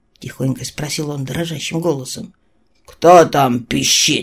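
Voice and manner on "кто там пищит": grumbling, put-out, complaining tone. A captive officer sleeping on a bare plank answers the boy at his cell: grumbled. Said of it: "Пробурчал пленный офицер".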